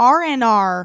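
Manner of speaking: loud, booming put-on American accent. Retelling the creator trying the phrase again: imitating an American accent. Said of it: "in an American accent?".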